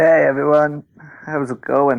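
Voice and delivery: sick-sounding voice. Greeting the others on a podcast, sounding sick. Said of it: "You sound sick".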